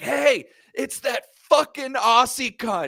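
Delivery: shrill, high yell at the top of the lungs. Retelling a friend yelling across the street at a man, imitating Murph yelling. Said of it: "Like yells it at the top of the lungs".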